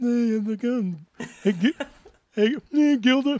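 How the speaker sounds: slow, high, drawn-out drawl. Retelling a bombed audition, doing a Bill Murray voice. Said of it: "I bombed an audition where I did that voice. And I was like".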